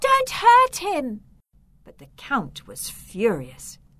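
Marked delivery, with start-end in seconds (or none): 0.0-1.2 very high cry shouted at full volume. Narrator reads a prisoner behind bars calling to the approaching Count, shouting.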